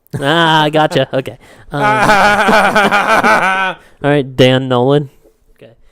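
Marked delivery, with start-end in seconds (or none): 1.8-4.4 loud laugh, sounding far off. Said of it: "That was kind of a Dan Nolan laugh".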